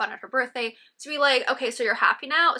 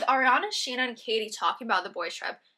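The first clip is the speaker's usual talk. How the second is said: ordinary talk, nothing marked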